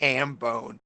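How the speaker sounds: normal talking voice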